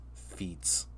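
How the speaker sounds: soft, quiet, embarrassed whisper.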